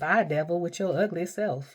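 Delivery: slow, stretched, drawn-out southern drawl. Quoting a woman she loves to hear, imitating Latoya O'Keefe. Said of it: "that southern drawl".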